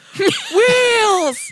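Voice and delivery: loud yelling. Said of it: "and they yell".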